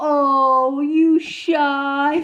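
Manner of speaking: high, patronizing, condescending tone, drawn-out oh. Imitating how adults talk to shy little kids: imitating adults talking condescendingly. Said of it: "say to little kids condescendingly".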